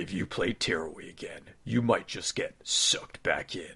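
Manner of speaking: very low 70s horror-trailer announcer voice. Asked to repeat his line as a trailer guy: 70s horror trailer announcer. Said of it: "as, like, a 70s horror movie trailer guy".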